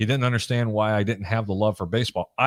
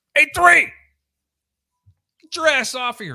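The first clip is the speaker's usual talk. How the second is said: put-on scream, higher and louder; 5 dB louder than usual. Retelling a football coach yelling from the sideline: imitating a coach screaming. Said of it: "he's screaming at the top of his lung".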